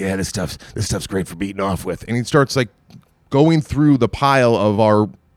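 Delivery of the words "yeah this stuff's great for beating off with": put-on muttering under breath. Retelling what a man said once the guards turned their backs, retelling a muttered remark. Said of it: "he's under his breath and he's going".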